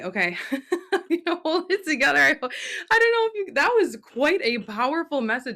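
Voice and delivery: high-pitched, teary, fighting back tears. After a message from the Arcturians, before the Q and A: on the verge of tears. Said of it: "I just feel like I'm gonna cry".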